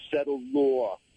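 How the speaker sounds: put-on Brooklyn accent. Recalling a favorite moment, the speaker quotes a justice: Justice Kagan Brooklyn accent. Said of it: "in her best Brooklyn accent".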